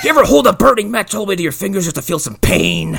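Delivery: high, loud, overwrought noir voiceover style, belted out.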